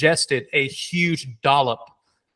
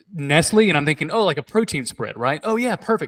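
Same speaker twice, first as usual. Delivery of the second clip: ordinary talk, nothing marked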